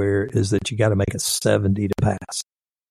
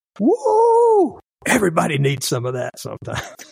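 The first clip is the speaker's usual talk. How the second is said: acted very high, swooping shout with drawn-out whoa; 9 semitones higher than usual. Retelling what a guy screamed out after the chewing-out: imitating someone screaming out. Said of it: "he screams out".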